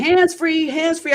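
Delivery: play-acted, high-pitched mild yell, half a scream. Retelling calling to a man walking ahead of her: retelling a scream. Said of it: "I started screaming".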